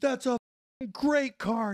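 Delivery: indignant, furious shout, voice very high. Retelling how Pat Tillman reacted when his car was roasted: imitating Pat Tillman furious. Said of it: "And Tillman hits the roof".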